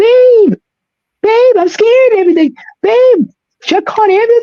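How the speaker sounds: acted, shrill, very high, frantic, panicked screaming. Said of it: "screaming because she was panicking".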